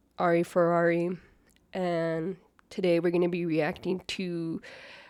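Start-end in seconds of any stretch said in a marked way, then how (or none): none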